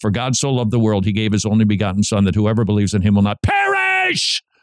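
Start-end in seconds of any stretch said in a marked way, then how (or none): 2.2-4.4 heavy, emphasized stress on perish. Quoting John 3:16 to show where readers put emphasis: strong stress on 'perish'. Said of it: "You are going to gloss over, ... That you're going to put the emphasis on the thing that you're most considering".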